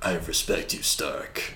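deep voice, dropped low, near whisper. Showing how he can sound like Thanos, doing a Thanos impression. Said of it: "i can try to sound like thanos".

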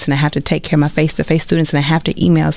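talking super fast, rushed and rattling.

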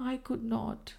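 soft murmur. Blanche answers the man asking why she left, murmured. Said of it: "she murmured".

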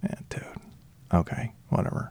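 soft, breathy, dismissive whisper.

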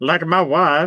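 comic put-on Kazakh accent, played for laughs. Joking with others, trying out an impression: Borat voice. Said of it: "I just want like a Borat voice".

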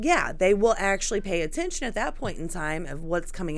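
ordinary talk, nothing marked

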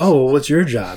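play-acted patronizing, talking-down, condescending tone. Retelling a TV scene where one character quizzes another, mock-condescending. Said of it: "very condescendingly is like".

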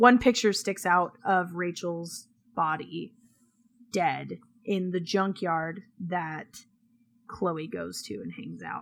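choked-up voice catching with emotion. Retelling a story's plot to another speaker, choked up. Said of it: "I'm getting, like, choked up".

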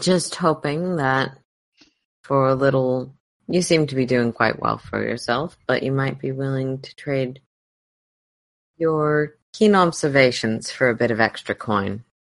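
gentle, mild delivery. Role-playing a character addressing another character, in a very soft voice. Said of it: "very soft voice".

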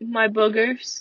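grudging, honest, reluctant tone. Retelling a classmate's answer to their teacher, in a very quiet voice. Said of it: "very, very quietly, Jonathan says".

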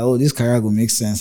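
plain

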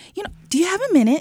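very high, polite, professional office voice. Talking about giving feedback, the speaker switches into their work voice. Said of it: "Let me use my work voice".

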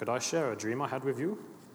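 put-on terrible Norwegian accent. Quoting a line from a book as its author might say it: terrible Norwegian accent. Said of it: "That's a terrible Norwegian accent".

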